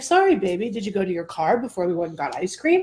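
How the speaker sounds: ordinary talk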